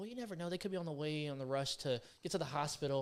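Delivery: put-on motherly voice. Retelling what his mom says on the phone about drivers: imitating his mom's voice. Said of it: "he just did her voice".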